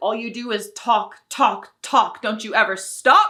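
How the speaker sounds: sharp, angry put-on yell. Retelling a mother snapping at her hungry son, imitating a yell at a child. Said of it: "Sorry, I didn't mean to yell".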